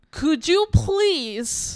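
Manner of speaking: put-on yelling. Retelling how a counselor yelled a request: imitating someone yelling. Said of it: "she really yelled at me".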